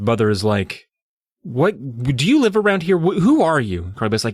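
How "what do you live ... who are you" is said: play-acted angry, confrontational, demanding voice. Retelling an angry mother confronting a girl: imitating an angry mother. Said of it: "this angry mother".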